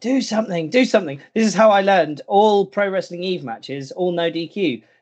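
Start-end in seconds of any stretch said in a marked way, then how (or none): 0.0-1.2 pitched-up, high screaming voice. Recalling a wrestling match, speaker reenacts screaming at the referee. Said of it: "I started screaming at the ref".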